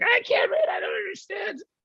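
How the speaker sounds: very high-pitched, animated woman's voice with swinging pitch. Retelling how wife reacts to hearing a british accent: imitating wife. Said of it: "She'll get five seconds into it and be like".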